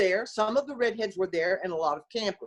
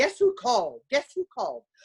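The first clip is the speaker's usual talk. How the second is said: acted, fast, all-excited mum voice; 4 semitones higher than usual. Retelling a mother's greeting on coming home: imitating an excited mother. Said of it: "my mother was, uh, all excited".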